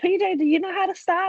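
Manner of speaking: very high, frantic, panicked shout. Chasing PJ down the street in pajamas, retelling yelling after him. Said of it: "I'm like yelling".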